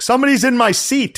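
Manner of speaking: very high, abrupt, sudden yell. Retelling a passenger on a flight yelling from the aisle: imitating someone yelling. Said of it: "I heard him yell".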